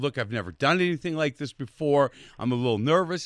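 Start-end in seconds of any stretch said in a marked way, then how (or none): none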